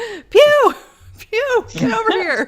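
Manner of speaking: shouting as if across a distance. Voicing Julie, who has dropped the phone, shouting for Pew.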